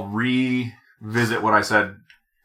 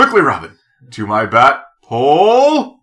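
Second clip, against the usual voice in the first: loud, animated, swooping sing-song, "pole" stretched out; 5 semitones higher, 8 dB louder than usual. A podcaster lists the impressions he and Bryce attempt, then does Adam West impression. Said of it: "we occasionally will throw in the Adam West".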